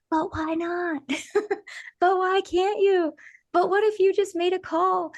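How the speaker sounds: small, bright, tiny, sparkly, high voice. Recounting a long-unheard inner voice, in a tiny sparkly voice. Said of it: "another sparkly voice".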